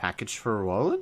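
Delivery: dumbfounded, lost, baffled and confused tone. Voicing a shopkeeper asked about a package: confused and dumbfounded. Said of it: "He looks completely confused and dumbfounded".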